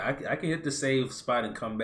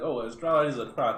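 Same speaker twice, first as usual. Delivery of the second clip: normal talking voice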